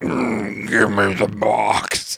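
spooky, very deep, very slow, creaky drawl. Explaining a voice that commands people, quoting it in a spooky voice. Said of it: "make the voice sound so spooky".

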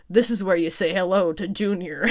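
plain

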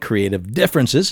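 normal talking voice

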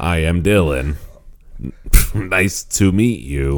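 put-on old-school robotic text-to-speech computer voice. Discussing a movie, showing how a character first sounds: Microsoft Sam voice. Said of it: "It sounds like Microsoft Sam".

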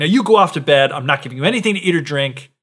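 imitated furious voice. Retelling a fairy tale, acting out Jack's mother sending him to bed: imitating a furious mother. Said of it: "'cause she's just so furious with them".

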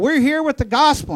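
high-pitched, screamed-out, evangelist-style crying out. Telling how a preacher stood up in a town, retelling a scream. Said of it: "he stood up and screamed out".

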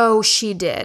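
plain

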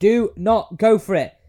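mock very slow, loud, high, drawn-out shout. Retelling watching a golfer on TV: imitating shouting at the TV. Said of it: "I remember shouting at the T V".

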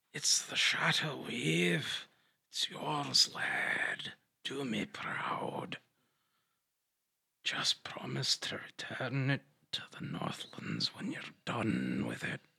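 breathy, whispered, mummified-corpse voice. A mummified corpse speaks to the one who picked it up, in a mummified corpse voice. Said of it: "It's a very desiccated, mummified corpse".

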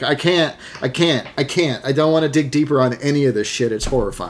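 plain

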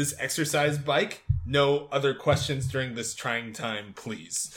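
ordinary talk, nothing marked

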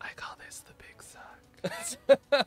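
close, breathy whisper, right in the ear. Playing a character who grabs a creature's heart, whispering in their ear. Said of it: "I whisper in their ear".

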